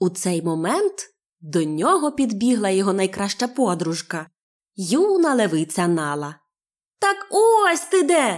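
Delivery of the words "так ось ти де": delighted, very high, drawn-out joyful call. Reading a story, a young lioness finally finds her best friend, shouting joyfully. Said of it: "радісно закричала вона".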